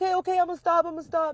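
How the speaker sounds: put-on very high, blubbering, whining little-boy crying. Retelling a client's visit, the speaker quotes the little boy, imitating his whining and crying. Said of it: "the little boy starts whining and crying".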